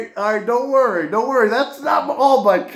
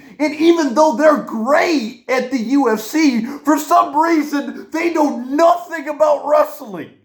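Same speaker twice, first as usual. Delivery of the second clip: worked-up, high, heated ranting; 5 semitones higher than usual. A video host talking to viewers about wrestling: yelling. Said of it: "now I'm yelling".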